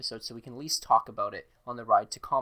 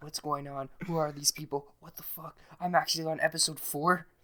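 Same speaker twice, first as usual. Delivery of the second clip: put-on yelling, higher pitch; 4 semitones higher than usual. Retelling a person's panicked texts about the show: imitating Falcon yelling. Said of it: "he's yelling and massive fast texts".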